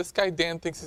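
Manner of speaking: ordinary talk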